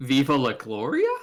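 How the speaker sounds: pitch rises on Gloria, like a question. Showing the phrase asked like a question: gloria rising like a question. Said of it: "you have to ask it like a question".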